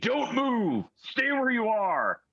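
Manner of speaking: very high, shrill screaming. Voicing guards who scream at the party to stay put: guards screaming orders. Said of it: "you hear them screaming".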